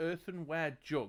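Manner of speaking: ordinary delivery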